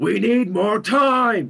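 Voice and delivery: mock stupid-angry yell, very high, very slow. Imagining how Harrison Ford could deliver the line, Harrison Ford angry shout. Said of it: "sort of in that stupid, angry way that he does things".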